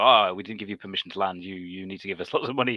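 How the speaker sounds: ordinary delivery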